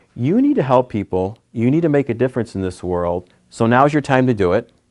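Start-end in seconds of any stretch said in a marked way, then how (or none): none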